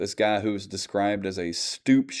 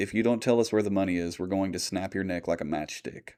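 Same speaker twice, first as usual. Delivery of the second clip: softly spoken, calm, even, menacing tone; 4 dB quieter than usual. Retelling a gang member's threat to a captive: imitating a quiet, calm threat. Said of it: "very quietly and calmly says".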